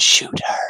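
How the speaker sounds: creepy, small whispered voice. Retelling how he, watching with his drone, urges her to shoot: imitating a creepy whispery voice. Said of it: "in this creepy little whispery voice".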